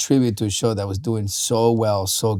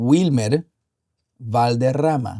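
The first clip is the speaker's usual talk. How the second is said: strong South American Spanish pronunciation with rolled rr; 3 semitones higher than usual. Asked for the correct pronunciation of a name: strong South American pronunciation. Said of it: "give us a really strong Wilmer Valderrama".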